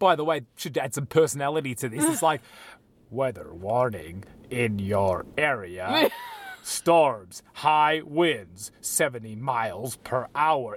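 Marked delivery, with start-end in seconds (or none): 3.1-10.8 low, automated, machine-like announcement voice. Recalling an automated storm warning announced in a robotic voice. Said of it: "from the robotic voice".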